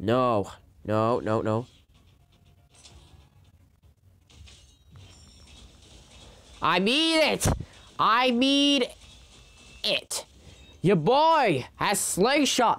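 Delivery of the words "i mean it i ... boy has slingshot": very slow, high, drawn-out rising yell. Streamer reacting while playing a Beyblade game: yelling. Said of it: "Sorry for yelling like that".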